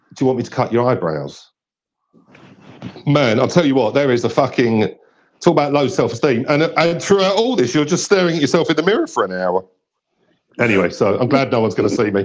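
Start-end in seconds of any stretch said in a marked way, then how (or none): 0.2-1.5 put-on gentle, soft whisper, lower. Retelling what the barbers ask when they lean in: imitating a gentle whisper. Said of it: "they sort of lean in and whisper gently".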